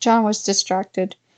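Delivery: ordinary delivery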